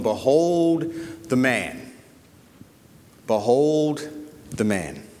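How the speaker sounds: play-acted, very slow, sickly sentimental mawkish delivery. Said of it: "you can almost hear it in a mawkish tone".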